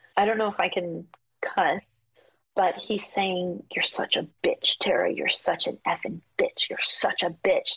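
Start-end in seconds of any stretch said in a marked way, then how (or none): 3.7-7.8 mock whisper, faster pace. The speaker recounts a man grabbing her and speaking into her ear, retelling a whisper. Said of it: "he's whispering in my ear".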